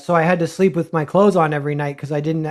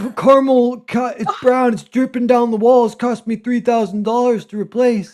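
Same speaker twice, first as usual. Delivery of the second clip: imitated old man voice, higher; 7 semitones higher than usual. Retelling what a lonely old man at a booth said: impression of an old man. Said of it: "That's a great impression".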